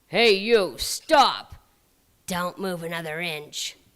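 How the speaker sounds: rough, gruff troll voice, loud and shouted. Narrator reads men who suddenly stop the storyteller, in gruff voices. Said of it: "some gruff voices stopped me".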